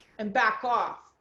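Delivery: firm tone. Demonstrating how to tell someone to stop, in a firm unacceptable tone. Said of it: "the tone of my voice".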